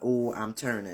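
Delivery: plain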